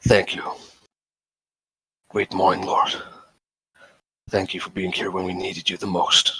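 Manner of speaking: very quiet, barely audible murmur under the breath. Voicing a character gripping a holy symbol, under the breath. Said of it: "And under my breath".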